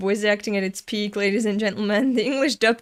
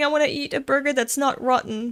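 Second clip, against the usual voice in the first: ordinary talk, nothing marked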